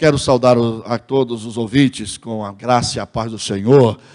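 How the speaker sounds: deep, loud, low, solemn booming radio voice.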